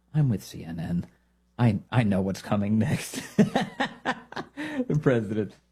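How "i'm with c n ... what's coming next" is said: low, sheepish delivery. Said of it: "sheepishly was like".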